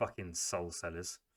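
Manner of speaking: low, muttered half-whisper under the breath. Muttering at the sellers of souls: half-whispering under breath. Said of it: "under my breath whisper".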